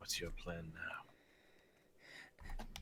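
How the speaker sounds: in-character whisper. Voicing a character who whispers a question to Galactor: in-character whisper. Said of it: "Jal is just going to whisper to".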